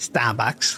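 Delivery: word said in a Boston accent. Showing off how Bostonians say Starbucks, with a Boston accent on Starbucks. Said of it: "we say that with a true Bostonian accent".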